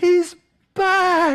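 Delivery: shrill, very high, alarmed scream. Retelling a story, voicing a neighbor's wife: retelling a woman screaming. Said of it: "She's just yelling and screaming".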